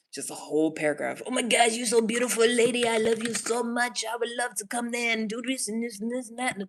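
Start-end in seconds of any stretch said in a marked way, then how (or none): 1.2-6.5 mock over-the-top gushing, higher and louder. Imitating men who send gushing messages: imitating over-the-top flattery. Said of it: "layer it on thick as fuck".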